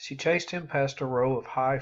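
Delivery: ordinary delivery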